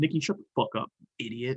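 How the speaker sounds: muttered under breath. Voicing a character who tells Nikki to shut up: muttering under his breath. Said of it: "under his breath".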